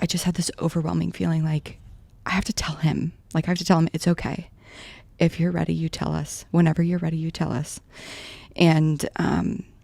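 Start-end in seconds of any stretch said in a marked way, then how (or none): none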